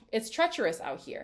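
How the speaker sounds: ordinary delivery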